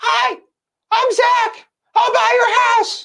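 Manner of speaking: put-on very high teenage voice. Recalling himself at seventeen, the speaker imitates his less deep teenage voice. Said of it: "My voice was not as deep as it was now".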